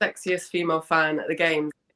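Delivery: ordinary talk, nothing marked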